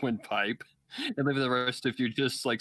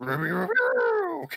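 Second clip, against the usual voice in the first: put-on cartoon dog voice, higher and louder; 5 dB louder than usual. Carrying on the bit in a Scooby-Doo voice. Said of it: "I sound like a freaking Japanese Scooby-Doo".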